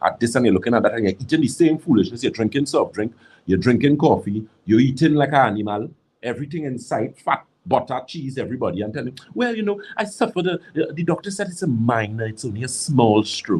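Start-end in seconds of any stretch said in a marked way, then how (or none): 9.3-13.6 pretentious, high-and-mighty, highfalutin put-on voice. Imitating someone saying it was only a small stroke: mock fancy highfalutin voice. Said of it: "In your very fancy, highfalutin, non-thinking voice".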